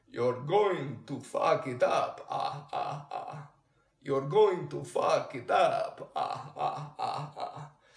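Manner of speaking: slow, silly, hammy character voice. Picking a silly or humorous tone of voice: Count Chocula voice. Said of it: "So I'm going to do Count Chocula".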